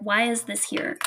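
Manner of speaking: ordinary delivery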